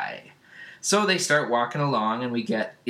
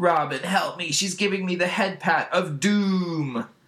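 mock panic, freaking out; 6 semitones higher than usual. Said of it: "Beast Boy starts to freak out".

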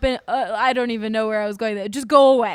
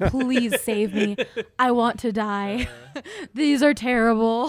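put-on whisper. Retelling how they reacted to long pun tangents on a podcast: imitating own whisper. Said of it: "literally be whispering into the mic".

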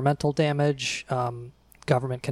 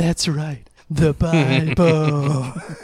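loud, very slow, drawn-out declaiming voice; 2 semitones higher, 5 dB louder than usual. Recalling a friend's bit, the speaker quotes his Trump impression. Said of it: "his impression of Trump going".

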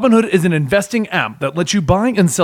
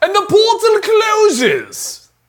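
sudden, very high, swooping bad British accent; 14 semitones higher than usual. Right after reading an ad, announcing that the portal closes: sudden put-on accent. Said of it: "Why did I get an accent with that?".

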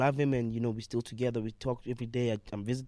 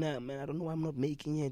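put-on crying voice, higher; 4 semitones higher, 3 dB quieter than usual. Retelling what a caller said on the phone, imitating someone crying. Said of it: "he's crying there. Saying".

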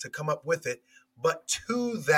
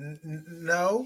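slow, hesitant delivery. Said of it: "I'm saying it in a hesitant voice".

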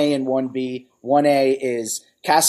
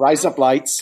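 put-on Australian accent. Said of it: "razor blades with an Australian accent".

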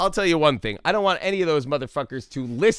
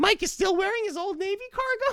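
put-on high voice, much higher; 4 dB quieter than usual. Joking around with a co-host, both talking in a high-pitched voice. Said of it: "I'm going to keep getting higher and higher".

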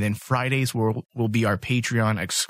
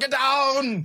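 very high tough-guy voice with downward stretched pitch. Imagining a character turned action hero: Arnold impression. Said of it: "he's like Arnold. He's all".

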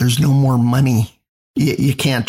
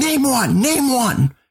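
mock, shrill, high, slow, repeated drawn-out screaming; 10 semitones higher than usual. Retelling a line screamed during a speech: imitating someone screaming. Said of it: "he kept screaming".

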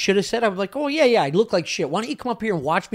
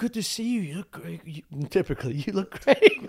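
mock soft, quiet delivery, much quieter; 3 dB quieter than usual. Describing how a man greets people, imitating a soft, quiet delivery. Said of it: "a very soft, quiet delivery".

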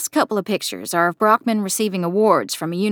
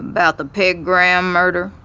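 low, slightly scratchy voice; 2 semitones lower than usual. A narrator reads a man's reply to a visiting interviewer, low, slightly scratchy voice. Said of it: "His voice is low and a little scratchy".

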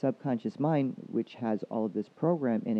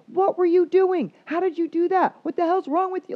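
freaked-out, scolding, very loud, very high scream; 8 dB louder than usual. Imagining how Grandma would have reacted to the cut: imitating someone screaming. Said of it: "she would have been screaming at you".

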